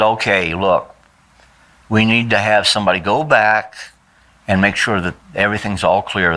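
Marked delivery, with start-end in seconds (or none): none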